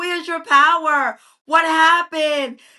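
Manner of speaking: put-on screaming, berating, scolding delivery. Retelling what the dad screamed in the corner: imitating someone screaming. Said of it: "his dad was kinda screaming at him".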